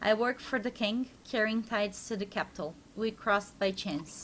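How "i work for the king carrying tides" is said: plain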